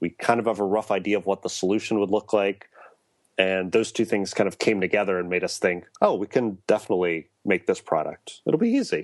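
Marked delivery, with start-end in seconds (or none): 6.0-9.0 breezy, overconfident, sarcastic, swooping sing-song delivery. Retelling what the team once thought about making the product: sarcastic, retelling own past thought. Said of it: "you're being sarcastic there".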